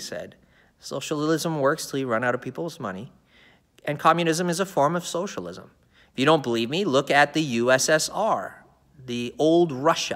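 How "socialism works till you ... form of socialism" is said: ordinary delivery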